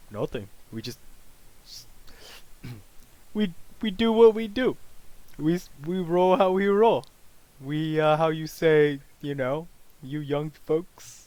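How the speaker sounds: put-on Russian accent. Answering a newcomer's question in a role-play scene, in a manly russian accent. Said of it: "very manly accent, but it's the best I could do for, you know, Russian".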